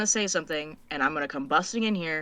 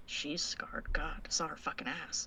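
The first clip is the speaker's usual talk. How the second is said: quiet mutter under breath, lower and quieter; 3 semitones lower, 12 dB quieter than usual. Voicing a character speaking to herself: muttering under her breath. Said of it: "under her breath".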